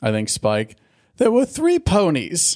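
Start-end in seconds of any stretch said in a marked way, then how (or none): 1.2-2.6 terrible, squeaky, very high put-on posh accent. Retelling a cartoon scene: terrible Spike posh boy accent. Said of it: "that's a terrible Spike impression with his accent".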